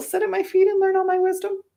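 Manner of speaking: voice climbing up and up, going high. Asking themselves why they are doing the show, voice going high. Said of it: "I don't know why my voice went all high there".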